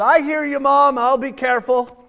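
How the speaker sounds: loud, high-pitched hollering. Telling a story of a mother and her son: imitating a son hollering. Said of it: "her son hollers out and says".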